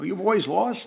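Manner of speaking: high-pitched New York accent.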